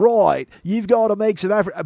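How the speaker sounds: put-on Australian accent. Retelling a chef on aphrodisiacs, put-on Crocodile Dundee Australian accent. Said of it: "that's the only Australian voice I can do".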